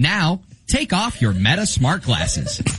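fake, not-so-great AI voice assistant voice. Playing an ai glasses representative calling a customer: put-on bad ai voice assistant. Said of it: "a radio host pretending to be a not so great A I voice assistant".

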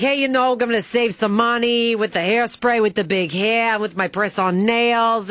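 clumsy, bad put-on New Jersey accent. Recalling how they talked about a woman who saves money, in a bad new jersey accent. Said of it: "I was doing my New Jersey accent".

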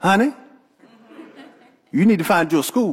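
lovely, sweet, loving, doting tone. Husband retelling what he said to his wife, in his lovely husband voice. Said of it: "in my lovely husband voice".

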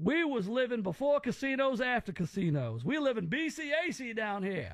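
cartoonish, blustery southern drawl. Describing the uncle who married the speaker's aunt, imitating Uncle Mike. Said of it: "Uncle Mike is kind of like Foghorn Leghorn".

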